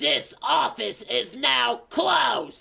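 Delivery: very high, rasping, creaky slug-lady drawl. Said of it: "Here's another quote".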